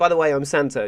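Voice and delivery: ordinary talk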